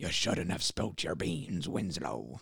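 hushed, quiet delivery in a put-on voice. Telling friends his second-favorite movie line read, doing a Willem Dafoe impression. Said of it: "that's such a good impression".

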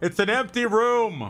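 very high, very slow, drawn-out yell. Voicing a character calling across a balcony to the others: yelling across a balcony. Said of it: "He yells across the balcony".

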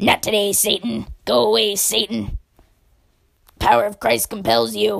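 loud put-on gremlin voice. Imitating people the speaker has reported, who talk in gremlin voices, gremlin voice. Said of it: "they speak in gremlin voices like this".

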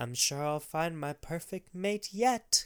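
put-on soft, high, little old grandma voice. Reading out a quote from Nanny to a co-speaker: Nanny in a grandma voice. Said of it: "I'm gonna try to say this in, like, a grandma voice".

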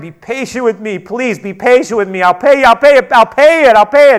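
high, loud, begging tone, repeated. Telling a parable, the speaker acts out a servant begging for more time: retelling a plea. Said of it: "He pleaded".

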